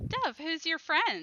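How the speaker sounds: prim voice. Narrating a game, voicing someone behind the player, in a prim voice. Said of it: "you hear a sort of prim voice from behind you say".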